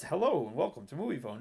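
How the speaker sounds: ordinary delivery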